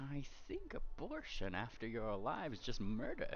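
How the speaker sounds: very hushed, very quiet pondering murmur. Voicing a character who ponders to himself: said very quietly. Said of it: "you hear him very quietly say".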